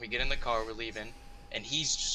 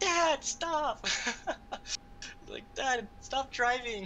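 put-on, shrill, very high, drawn-out child screaming; 13 semitones higher than usual. Retelling how a drunk driver's son screamed at him, imitating a son screaming. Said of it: "his son was like screaming".

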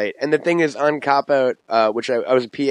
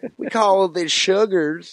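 put-on, higher southern tv cook voice; 6 semitones higher than usual. Asked to do it again, repeating the impression: Paula Deen impression. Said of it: "Paula Deen talk like this".

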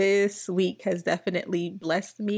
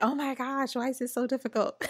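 contained, mock exasperated, frustrated scream; 5 semitones higher, 3 dB quieter than usual. Retelling getting frustrated mid-prayer while recording: imitating her own frustrated scream.

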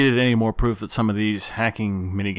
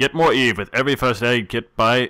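fake, put-on Australian accent; 2 semitones higher, 3 dB louder than usual. Reading a promotional line aloud: put-on australian accent. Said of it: "I put on a freaking accent!".

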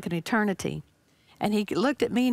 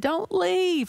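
put-on loud calling voice, higher; 9 semitones higher than usual. Retelling what he said as the plane landed: imitating a loud voice. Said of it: "with this loud voice".

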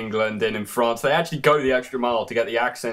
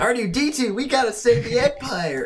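put-on California-style accent; 12 semitones higher than usual. Showing off an accent on request, in a Californian accent. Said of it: "really easy to do like a Californian accent".

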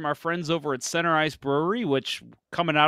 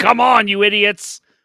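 very loud, slow, drawn-out, high-pitched screaming; 7 semitones higher, 12 dB louder than usual. Imagining a listener from the bar reacting to the show: imitating Adam screaming. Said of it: "just screaming, going".

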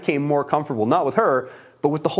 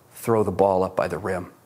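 put-on grave, deadly earnest, very low voice; 8 semitones lower than usual. Retelling what a man told him right before the game, imitating a very serious tone. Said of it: "with the most serious face and the most serious tone".

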